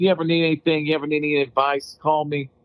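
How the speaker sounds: put-on Boston accent. Tell a story you will never forget, quoting the man by imitating his Boston accent. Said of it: "He had his Boston accent".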